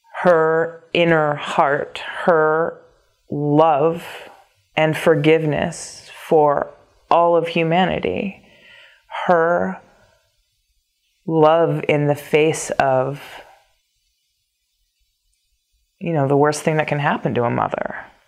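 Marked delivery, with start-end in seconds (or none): 9.3-18.0 nearly crying, just holding on. Speaking about the sorrows of Mary, on the verge of tears. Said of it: "I'm actually gonna start crying".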